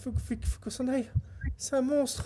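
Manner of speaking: panicked, terrified voice.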